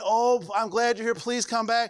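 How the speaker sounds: put-on begging voice. Acting out the church begging a missing member to return: imitating begging. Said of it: "And we're begging, begging, begging".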